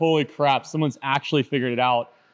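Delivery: ordinary delivery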